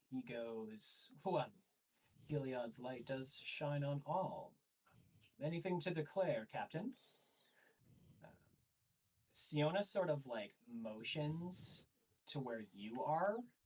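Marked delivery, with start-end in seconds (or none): 1.2-6.9 faintly smug, knowing, self-satisfied delivery. A game master voices the High Inquisitor addressing the captain, smirking a little. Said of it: "he smirks a little bit as he's talking to her".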